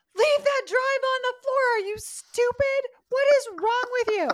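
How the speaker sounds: shrill, very high screaming. Retelling how she and a friend screamed at a TV character, retelling screaming at the TV. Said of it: "we're screaming at the TV".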